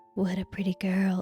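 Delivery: soft, creepy whispered voice. Imitating the other speaker quoting a ghost: imitating a creepy quote voice. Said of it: "you'll be like".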